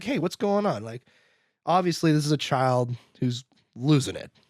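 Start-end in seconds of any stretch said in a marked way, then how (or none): 0.0-0.8 calm, kindly, gentle, mild tone, put-on. Retelling a film scene, an old man calming a panicked kid: imitating someone speaking gently. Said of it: "he's just gently like".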